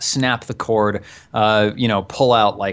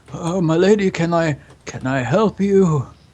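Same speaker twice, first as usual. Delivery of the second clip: put-on high, frail, decrepit, very old man voice; 7 semitones higher than usual. Voicing Zarkov as a lady approaches him: Zarkov's ancient old-man voice. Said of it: "this like ancient decrepit old man".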